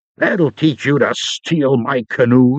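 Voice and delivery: snarled, snarling words. A man who has just punched the narrator snarls at him, snarling. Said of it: "he snarled".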